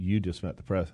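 ordinary talk, nothing marked

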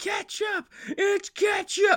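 frantic, shrill, very high scream. Imagining an essential worker driving to work answering a Pokemon question: imitating someone screaming. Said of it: "just screaming".

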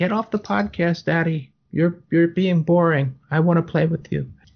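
put-on talking dog voice. Voicing the dog that climbed on the speaker: voicing the dog. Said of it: "He's like".

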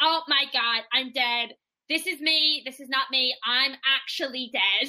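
usual speaking voice

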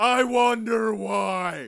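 high-pitched shouting. Acting out a scene with the Spirit, yelling. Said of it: "Why are you always yelling at me?".

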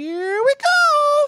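very high, loud Italian cartoon cry, "go" stretched. Showing off an impersonation from Mario Kart after a listener says go ahead, do a Mario impression. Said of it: "I remember Mario Kart where he goes".

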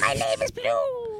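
high-pitched cartoon mouse voice. Imitating a friend's childhood voice: high-pitched cartoon mouse voice. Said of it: "his voice was somehow even higher pitched back then".

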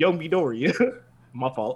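slow, drawn-out anime hero voice. Joking about what a character would say after an accident: imitating All Might. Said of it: "then All Might gonna be like".

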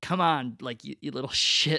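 put-on irritated tone. Retelling own reaction to someone too afraid to reveal something, mock-irritated. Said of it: "to the point where I was like irritated".

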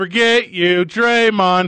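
loud heckling yell. Doing an impression for others to guess: impression of a crowd heckling. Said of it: "I'm gonna do an impression".

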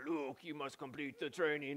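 soft, quiet, weak put-on movie-character voice. Retelling the swamp training scene from the film, in a bad Yoda voice. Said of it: "That's a pretty bad Yoda voice".

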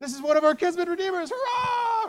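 mock excited cry, very high, loud, rising. Retelling the story of Ruth and Boaz, a woman hears Ruth's news: acting out excited speech. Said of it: "She's all excited".

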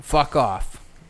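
British English accent. Showing others an easy way to swear: English accent. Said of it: "easy way to swear in an English accent".

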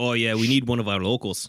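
mock brogue mixing Scottish and Irish accents.

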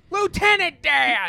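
very high, loud shouted-out call. Shouting a movie line while talking about films: Tom Hanks impression. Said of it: "Stop doing my Tom Hanks impression".

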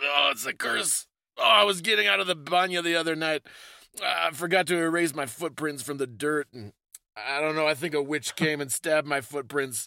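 put-on sick voice. Speaker acts out a cursed person in a two-person bit; pretending to sound sick. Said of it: "oh man i I think I think somebody put a curse on me".

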